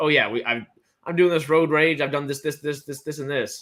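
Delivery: sarcastic, loud voice. Retelling a tv character's line about road rage: imitating a sarcastic confession. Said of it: "they say it sarcastically".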